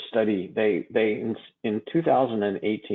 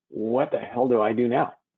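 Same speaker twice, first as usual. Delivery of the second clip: put-on alarmed, panic-struck tone. Retelling what the doctor asked on the phone: imitating a panicked voice. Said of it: "he asked me in a panicked voice".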